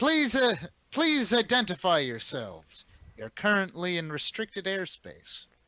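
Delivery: clear, ringing call that carries. A flying group's leader calls out to the newcomers, voice ringing out. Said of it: "her voice rings out".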